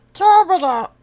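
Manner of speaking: very high, loud, forced cartoon squeak. Playing a game and announcing a line in a Kermit voice. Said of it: "In Kermit voice".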